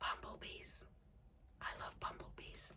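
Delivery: hushed whisper. Looking at a new bumblebee fabric print, whispering. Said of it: "why am I whispering?".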